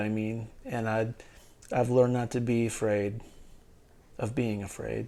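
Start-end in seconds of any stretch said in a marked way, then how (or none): none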